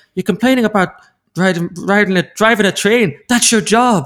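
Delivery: bad Cork accent. Replaying what Keane should have said back to a complainer, bad Cork accent as Keane. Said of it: "I've just added my Cork accent".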